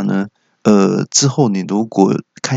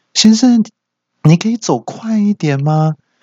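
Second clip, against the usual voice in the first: mock shouted call across a distance, very high; 12 semitones higher than usual. Retelling how a nurse called out from far ahead: imitating someone shouting. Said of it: "小姐就大喊说".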